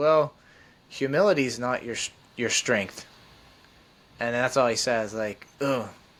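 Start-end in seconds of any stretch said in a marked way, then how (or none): 0.0-3.1 kindly, very gentle, mild delivery. Recounting his answer after being asked about weaknesses, retelling a gentle remark. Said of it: "he just said it very gently".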